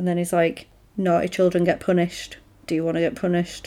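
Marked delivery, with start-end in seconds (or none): 1.0-3.7 put-on creepy voice, lower and quieter. Retelling a scene where Santa scolds a squirming girl: imitating a creepy tone. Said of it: "it's really creepy".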